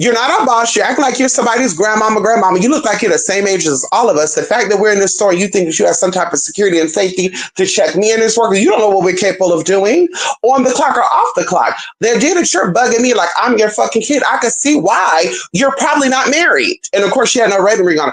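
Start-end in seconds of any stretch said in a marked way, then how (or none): none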